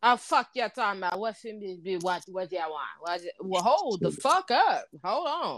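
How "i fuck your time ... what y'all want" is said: mock-angry Jamaican accent. Describing how Jamaican people he knows talk when mad: mock-angry Jamaican accent. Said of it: "that motherfucking accent gonna jump on your ass quick".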